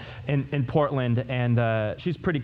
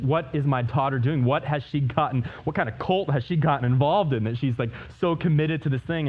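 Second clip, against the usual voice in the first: plain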